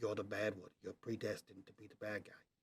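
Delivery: hushed whisper. Voicing a character leaning toward a companion: whispering in character. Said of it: "does his best version of a whisper".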